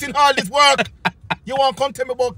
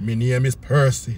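deep, very low, put-on sultry, sexy voice; 13 semitones lower, 4 dB quieter than usual. Acting out being asked your name, answering in a put-on sexy voice. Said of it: "I have a answer in a sexy voice".

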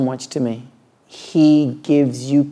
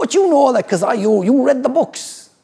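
pirate voice, pitched very high; 10 semitones higher than usual. Retelling what the old man next door said: imitating a neighbour as a pirate. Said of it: "I made him sound like a pirate".

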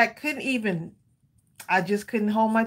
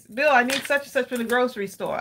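usual speaking voice

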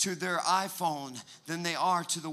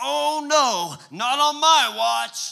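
booming, very loud, slow, pitched-up, theatrical delivery; 8 semitones higher, 10 dB louder than usual. Retelling a son's line during a toy fight: imitating a dramatic child. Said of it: "he's really dramatic".

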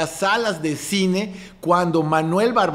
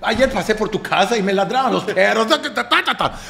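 high, exaggerated comedic Yucatecan accent. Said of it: "Habla así como que".

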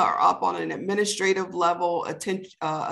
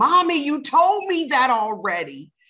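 shrill, swooping, fed-up tween-like scream; 7 semitones higher, 5 dB louder than usual. Retelling a tween daughter's complaint: imitating a daughter screaming. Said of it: "her screaming".

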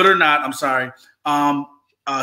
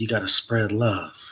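sultry, seductive, sensual delivery; 5 semitones lower, 5 dB quieter than usual. Before getting into the next part, saying the line sexy and sensual. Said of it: "I'm going to say this real sexy and sensual".

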